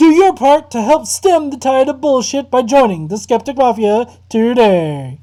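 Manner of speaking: very loud 1940s radio drama announcer voice. The speaker reads the closing line as a 1940s radio drama announcer. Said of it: "read in sort of a 1940s radio drama announcer".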